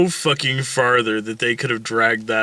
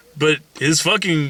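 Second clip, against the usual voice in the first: normal talking voice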